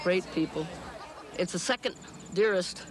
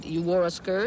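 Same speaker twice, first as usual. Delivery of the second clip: ordinary talk, nothing marked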